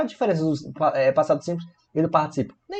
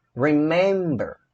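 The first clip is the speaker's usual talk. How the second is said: remember with stress on second syllable men. Explaining in portuguese which syllable is stressed: stress on men in remember. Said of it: "a sílaba tônica qual é? É a men".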